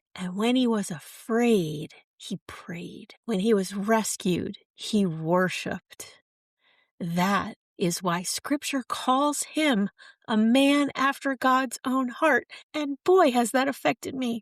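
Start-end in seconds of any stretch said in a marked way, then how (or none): 7.0-14.4 trembling, shaky, tearful voice on the verge of crying. Recording a podcast, moved by what he is saying, shaky voice near tears. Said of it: "my voice is very shaky because I'm on the verge of tears".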